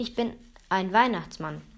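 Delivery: ordinary delivery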